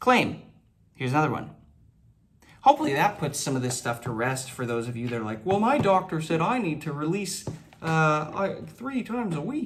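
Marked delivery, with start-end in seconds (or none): 5.4-9.7 high, slow froggy puppet voice. Speaker mocks viewers quoting their doctor's advice, Kermit the Frog voice. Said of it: "I don't know why I just went in that voice".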